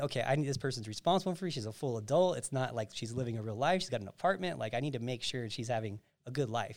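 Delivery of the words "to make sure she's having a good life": ordinary talk, nothing marked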